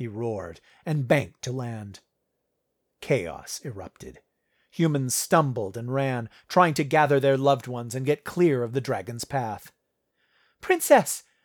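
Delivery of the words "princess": very high, excited call. As a dragon lands, calling out to the princess, crying excitedly. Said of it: "Denise cried excitedly".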